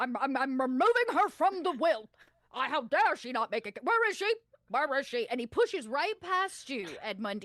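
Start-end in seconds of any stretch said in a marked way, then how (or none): 0.0-5.3 put-on very old pigeon voice, louder. Voicing a very old uncle, a pigeon, who pushes in: Ponsonville Hautboys Lavendale voice. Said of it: "you know this voice very well".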